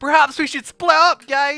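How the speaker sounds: very high animated-cartoon character voice. Voicing an animated character who walks over to the group: animated cartoon character voice. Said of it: "an animated character comes over and says".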